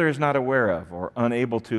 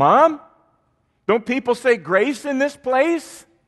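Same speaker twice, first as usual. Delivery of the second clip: shrill, loud, very high-pitched call; 13 semitones higher, 6 dB louder than usual. Retelling a girl calling down a crowded counter to her mom: imitating a loud call. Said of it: "in a loud voice she said".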